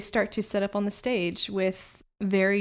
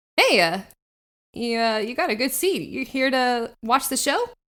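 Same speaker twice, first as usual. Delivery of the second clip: raised, higher-pitched cat-person character voice; 3 semitones higher, 5 dB louder than usual. Game master voicing a tabaxi harpist who turns to the players: tabaxi harpist character voice. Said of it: "uh, a tiger-striped tabaxi, um, kind of stringing a harp to the side, / uh, a tiger-striped tabaxi, um, kind of stringing a harp to the side, is the closest one to you. Um, and she sees like the flowe".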